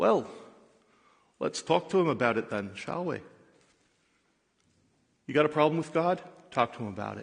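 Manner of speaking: typical Scottish brogue. Speaker quoting a father answering his son, in a Scottish brogue. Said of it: "in his typical Scottish brogue".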